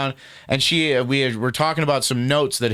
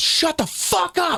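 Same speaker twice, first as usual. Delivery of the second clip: mock in-your-face shrill scream, very high. Recounting a woman yelling at Morgan, imitating her screaming. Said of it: "and just started screaming like that".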